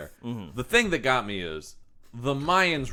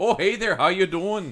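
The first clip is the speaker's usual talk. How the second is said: put-on Canadian accent with raised pitch; 7 semitones higher than usual. Discussing a movie's characters, the speaker imitates how they talk in a canadian accent. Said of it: "the parade of Canadian accents in this movie".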